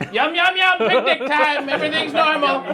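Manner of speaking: shrill, very high scream. Retelling own words at a picnic in the game: imitating own screaming. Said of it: "I'm just screaming like".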